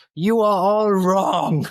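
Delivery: slow, mock shout.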